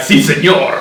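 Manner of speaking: loud put-on voice of a burly wrestler speaking Spanish. Joking about imagining wrestlers, acting one out: mock wrestler speaking Spanish. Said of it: "big dudes with hairy chests speaking Spanish".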